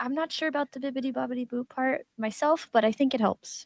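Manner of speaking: hushed, half-whispered aside. In a game, a player's character half-whispers to a party member: half-whispering. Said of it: "I'm gonna whisper to Mister T".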